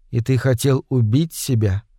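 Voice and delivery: ordinary talk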